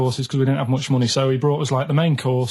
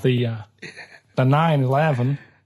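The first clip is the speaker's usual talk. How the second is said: put-on American accent. Asked by another speaker to do it again, the speaker does an American accent. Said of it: "Do that American accent again?".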